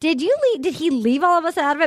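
high, mock nervous, fretful delivery.

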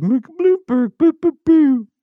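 mocking booing sound. Imitating the other speaker's reaction to a story: mocking imitation of the other speaker. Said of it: "you're just like".

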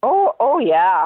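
a bit Minnesotan-sounding. Responding to another speaker, sounding a little Minnesotan. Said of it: "that did sound a little Minnesotan".

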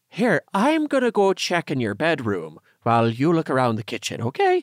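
little leprechaun character voice. Narrating a story, voicing a character speaking to another character, Tanner in a leprechaun voice. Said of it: "you made him sound like a leprechaun".

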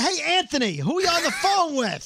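high, swooping, screamy hollered yell. Recounting what he yelled at Anthony on the phone, retelling a scream. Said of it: "You're screaming".

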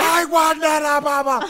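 very high, very slow, drawn-out howling scream. Speaker retelling someone screaming during a shower: imitating someone screaming. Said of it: "She's just screaming at the top of her lungs".

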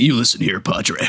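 put-on gritty actor voice. Describing a scene where a character realizes who he's talking to, gritty Colin Farrell impression. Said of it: "so it's still got that grit to it".

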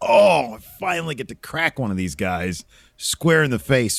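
usual speaking voice

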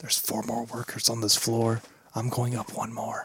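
soft, hushed whisper. Playing a character sneaking upstairs, telling the party: whispering. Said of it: "I whisper".

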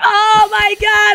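very high, thrilled, excited squeal. Retelling how the girls who were in on it reacted, imitating the excited girls. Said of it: "they were so happy and like so excited".

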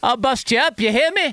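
attempted Irish brogue, very high-pitched. Asked to do it one more time, repeating the line in an Irish accent. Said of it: "It's my Irish accent".

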